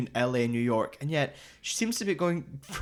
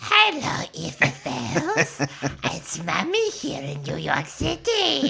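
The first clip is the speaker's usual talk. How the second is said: deranged evil doll voice; 2 semitones higher than usual. Retelling how a mother spoke to her baby girl, crazy killer Chucky voice. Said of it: "puts on a crazy killer Chucky voice".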